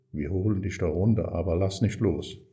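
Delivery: ordinary delivery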